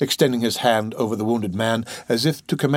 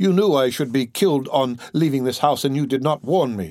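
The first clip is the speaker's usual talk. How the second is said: ordinary delivery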